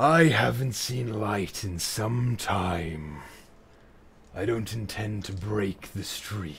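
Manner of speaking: large beast voice, drawn out slowly. Narrating the scene, the speaker voices a large creature calling out, in a large creature voice. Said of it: "a voice call out from a large creature".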